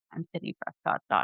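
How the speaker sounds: proud tone. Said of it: "she said it with, like, such pride".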